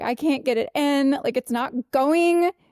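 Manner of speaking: mock crying while talking. Retelling a moment when mom tried to help: imitating crying while talking. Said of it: "and I was like crying".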